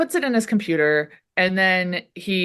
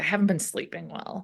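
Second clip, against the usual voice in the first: mock grumpy, cranky voice, quieter; 9 dB quieter than usual. Retelling a scene where he is still cranky: imitating someone cranky. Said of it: "Mulder's still cranky".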